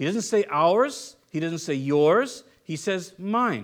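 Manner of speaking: ours, yours and mine stressed, drawn out slow and hard.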